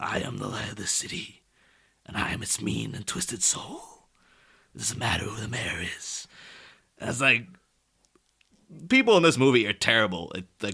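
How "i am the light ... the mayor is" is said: growled out in a breathy whisper. Retelling a villain's line from the movie: growling like Max Shreck. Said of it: "sort of growls".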